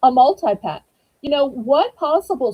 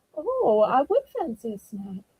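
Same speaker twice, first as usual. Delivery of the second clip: put-on Southern voice slipping into a soft British accent; 6 dB quieter than usual. Speaker acting out what they say when visiting somewhere: british accent. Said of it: "I somehow go from being Southern to British?".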